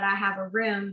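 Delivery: normal talking voice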